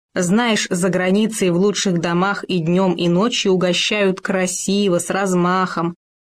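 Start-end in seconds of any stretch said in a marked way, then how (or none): none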